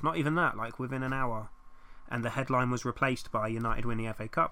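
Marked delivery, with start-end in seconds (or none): none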